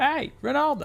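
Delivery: very high, carrying, calling-out yell. Showing how a name is pronounced, as if yelling for someone, yelling a name. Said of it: "Like you're yelling for a girl named Ronalda?".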